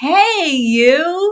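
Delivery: very high, sunny, beaming voice, "you" stretched. Retelling someone's greeting, imitating a big wide smile. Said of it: "puts on this big, wide smile and says".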